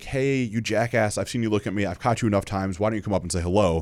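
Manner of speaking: ordinary talk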